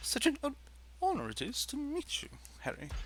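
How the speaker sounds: halting, whispered, stuttering character voice. Doing an impression of a character greeting Harry: Professor Quirrell voice. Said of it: "I was trying to do an impression of Professor Quirrell".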